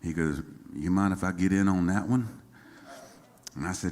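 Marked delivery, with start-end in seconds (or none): 0.7-2.3 put-on low country South Carolina accent. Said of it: "low country South Carolina accent".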